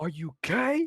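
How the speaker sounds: put-on, high-pitched, furious, angry shout. Retelling what they blurted out in class as a kid: imitating a furious shout. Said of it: "I was furious, and this is what I said".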